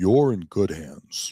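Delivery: very low, deep put-on voice. Taking a turn at the line he said needs a deeper voice, deeper voice. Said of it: "Gotta be deeper voice for that one".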